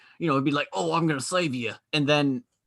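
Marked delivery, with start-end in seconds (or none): 0.7-1.8 put-on gruff voice with an Australian accent. Imagining a movie hero role, the speaker does a gruff Australian Jason Statham voice. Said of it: "gruff and Australian".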